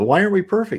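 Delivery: mock, lightly sarcastic tone pitched very high. Re-reading a quoted answer from a text and commenting on it: imitating a slightly sarcastic answer. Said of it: "So he's being a little bit sarcastic".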